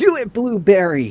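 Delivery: very high, very loud shout. Yelling out to a character named Blueberry in the game: yelling to Blueberry. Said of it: "I'm gonna yell out to Blueberry".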